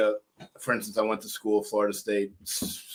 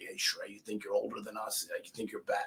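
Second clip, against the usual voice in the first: very quiet, taunting half-whisper; 11 dB quieter than usual. Retelling what drill instructors said in boot camp, imitating someone half-whispering. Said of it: "drone instructors whispering in my ear".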